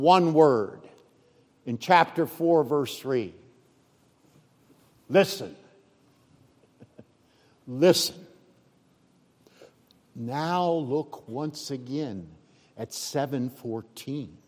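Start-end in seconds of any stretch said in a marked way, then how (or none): 5.1-8.2 put-on forceful voice, lower pitch. Teaching on a parable, quoting the one-word call to the crowd, acting out a strong, forceful command. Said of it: "with a strong, forceful voice".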